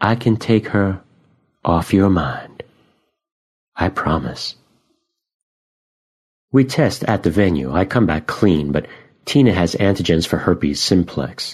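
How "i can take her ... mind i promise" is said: gentle, soft-spoken, soft voice. Reading a story, a woman offers to help the narrator, in a soft voice. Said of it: "her voice soft".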